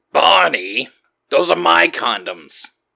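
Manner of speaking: slow, drawn-out, high-pitched character voice. Doing a Fred Flintstone impression when asked: Fred Flintstone voice. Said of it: "do your Fred Flintstone".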